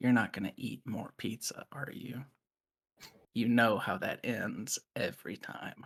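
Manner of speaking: barely audible, hushed, very quiet whisper. Retelling what a man always whispers to Ethan, acting out a very quiet whisper. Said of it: "He'll very quietly whisper".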